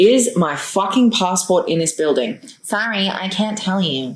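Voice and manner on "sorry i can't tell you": put-on American accent. Retelling a woman's reply to a question about a passport, in an american accent. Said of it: "I don't know why I'm giving her an American accent".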